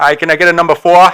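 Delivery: Boston-accented speech. Speaker shows how they order at a drive-through; Boston accent. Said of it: "whenever I'm in a drive-through, I get a Boston accent".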